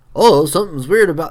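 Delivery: put-on hillbilly voice. Quoting what Link says on finding an odd rock: Link hillbilly voice. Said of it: "Link's, like, hillbilly voice".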